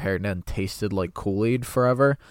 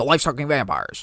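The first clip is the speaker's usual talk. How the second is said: put-on conspiratorial ranting voice, higher pitch; 5 semitones higher than usual. Repeating the bit for a listener who never heard him: Alex Jones impression. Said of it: "You never heard him?".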